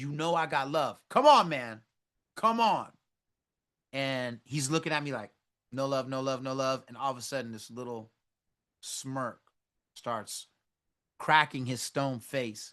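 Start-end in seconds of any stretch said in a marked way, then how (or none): 0.0-2.9 loud yelling shout. Retelling pleading with the man at a loud, crowded front door: retelling his own yelling. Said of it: "I started yelling".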